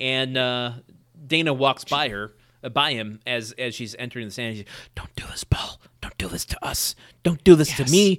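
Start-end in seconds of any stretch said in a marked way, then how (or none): 5.0-8.2 whispered delivery. Retelling a character's plea to paul at the witness stand: imitating a whisper. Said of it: "it doesn't work when we're both whispering".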